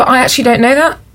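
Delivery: fast, rising blurted delivery.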